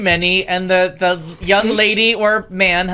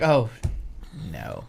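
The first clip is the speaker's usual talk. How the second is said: very slow, deliberate, drawn right out; 11 semitones lower, 9 dB quieter than usual. Retelling how a friend reacts to a conversation: imitating Renee. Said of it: "it's so Renee".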